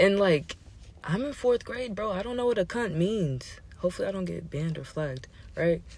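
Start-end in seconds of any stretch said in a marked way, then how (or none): none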